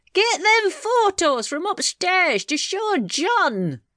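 shrill, very high bawling with one word drawn out. A husband calls to his deaf wife by the fireside, bawling. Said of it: "he bawled".

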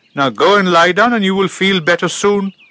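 crisp brisk voice. Mama Elephant replies to Appu's protest about the doctor, briskly. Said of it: "replied Mama Elephant briskly".

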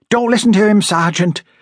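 begging, pleading, very high-pitched voice. A woman cuts in after the man dismisses her worry, pleading. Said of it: "the woman pleaded".

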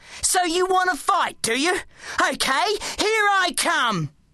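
very high, rage-filled, taunting tone. The narrator speaks into the shadows above to the Apple Man; furious. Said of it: "I was filled with rage".

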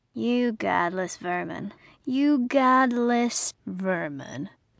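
menacing snarl, full of menace. A huge man holds the narrator after hauling them from a car, snarling. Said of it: "he snarled".

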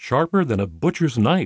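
ordinary delivery, nothing marked

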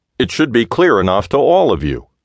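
hot, angry, heated delivery. The analyst answers the elderly gentleman's question to him, retorting hotly. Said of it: "the analyst retorted hotly".

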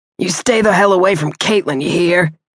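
snarling, threatening tough-guy voice. Narrator reads a man's threat as he grips the narrator, snarling. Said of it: "he snarled".

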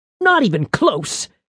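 openly disgusted. She misses the beast with her bolt and comments: with disgust. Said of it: "she said with disgust".

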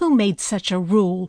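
lofty, disdainful, haughty, superior tone. Narrating a story, reading a woman's question to a scout, in a haughty voice. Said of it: "the woman asked in a haughty voice".

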